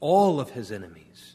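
strong stress on the word "all". Speaking of God as King subduing enemies, stress on the word all. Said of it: "Emphasis on the word all".

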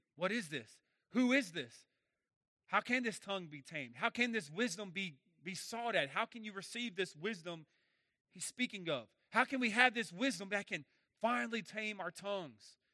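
ordinary talk

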